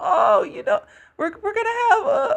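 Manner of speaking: very high, swooping, sing-song squealing cartoon voice. Recounting what Mr. Poopybutthole says at the end of season two: bad Mr. Poopybutthole impression. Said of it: "that was a terrible impression".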